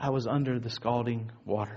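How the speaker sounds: very soft, low, gentle, hushed voice.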